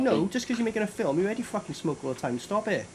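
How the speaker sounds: ordinary talk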